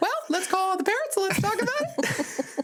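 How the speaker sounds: very high, squeaky, shrill-sounding voice. Retelling how Mom answers a child's sleepover request, imitating my mom. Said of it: "That's my mom voice".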